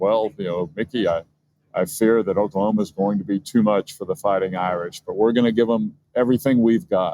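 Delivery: ordinary talk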